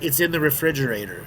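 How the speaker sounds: ordinary delivery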